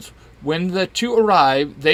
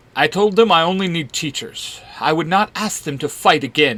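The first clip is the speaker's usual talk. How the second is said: usual speaking voice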